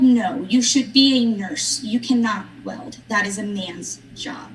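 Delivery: ordinary talk, nothing marked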